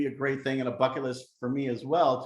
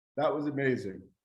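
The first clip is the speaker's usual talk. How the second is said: choked-up voice catching with emotion. Recalling seeing Vienna through father's eyes, getting choked up. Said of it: "I'm getting a little choked up".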